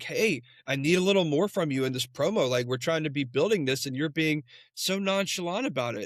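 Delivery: normal talking voice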